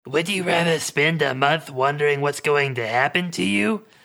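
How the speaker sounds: gruff voice, gruff delivery. Narrator voices a man putting a question to the listener, gruff voice. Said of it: "the man says in a gruff voice".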